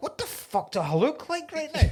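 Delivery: mock horrified outburst.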